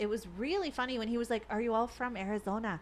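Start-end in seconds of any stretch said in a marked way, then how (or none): 1.5-2.8 terrible put-on Irish accent, slower. Recounting a night out, quoting the irish bartender server: terrible irish accent impression. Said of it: "that was a terrible impersonation".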